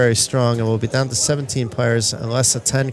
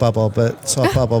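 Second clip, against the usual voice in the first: ordinary talk, nothing marked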